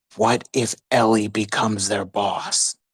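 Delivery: low, voiced stage whisper. As Sojourner the slime, perched on Kappa's shoulder, half-whispering into his ear. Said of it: "gets on his shoulder and whispers into his ear".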